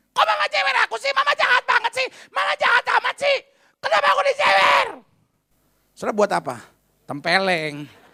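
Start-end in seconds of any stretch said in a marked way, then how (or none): 0.2-4.9 put-on play-acted child's yell, pitched very high. Retelling a child getting an ear pinch from mama, imitating a child yelling. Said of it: "dia teriak gini".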